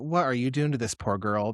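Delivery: normal talking voice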